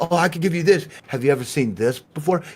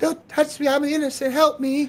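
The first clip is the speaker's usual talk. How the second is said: very high, fake innocent put-on little-girl voice; 11 semitones higher than usual. Showing how an ai voice changer sounds in game: put-on innocent little girl voice. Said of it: "sound like a pretty little girl and just sound oh so, so innocent".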